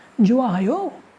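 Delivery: जो आयो lifted at the end, rising tune. Teaching pronunciation of a question word: rising question tone on "जो आयो". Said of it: "उसको थोड़ा उठा के पूछना है शब्द को, जो आयो ऐसे करके".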